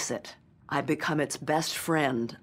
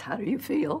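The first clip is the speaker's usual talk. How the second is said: shaky, trembling voice at a higher pitch; 7 semitones higher than usual. Retell what she asked you as you crawled out of the water, shaky Katharine Hepburn voice. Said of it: "she said in that shaky voice".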